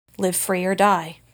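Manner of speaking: grave, solemn tone. Narrator reads a Hork-Bajir holding his hand out to you: solemn voice. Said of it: "says in a solemn voice".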